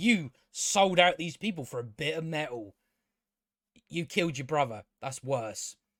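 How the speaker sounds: mock lofty, haughty, self-righteous, high-and-mighty lecturing tone. Retelling what a character in the show said: imitating a high and mighty tone. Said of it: "She says it, like, all high and mighty".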